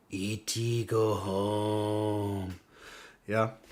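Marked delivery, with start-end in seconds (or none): 0.1-2.5 low, very slow alien voice, "home" drawn out. Doing an impression for stream viewers: E.T. voice. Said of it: "I'm gonna do my E T impression".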